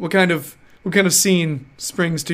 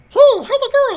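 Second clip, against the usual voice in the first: put-on tiny kid voice, much higher, faster; 6 dB louder than usual. A parent imitates their three-year-old's little voice, high-pitched little kid voice. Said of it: "it's this high-pitched little".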